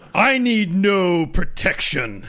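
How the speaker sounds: angry, forceful voice. An actor answers a warning in a recorded scene, reading the line angry. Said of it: "So just read your lines angry".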